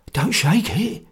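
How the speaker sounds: whispering hoarsely. Narrator reading a man reacting to an old bottle of fluid, hoarse whisper. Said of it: "he whispered hoarsely".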